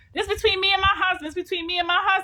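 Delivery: put-on shrill yelling. Retelling a relative yelling that it is not their business: imitating her yelling. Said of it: "she's yelling at me".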